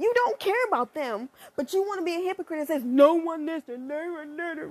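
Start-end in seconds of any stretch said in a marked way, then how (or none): 2.8-4.7 fake blubbering, sobbing through the words. Mocking a hypocrite who claims no one listened, in fake crying. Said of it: "It's just my fake crying".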